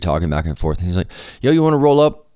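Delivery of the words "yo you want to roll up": loud shouting, calling out. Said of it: "yelling from across the street".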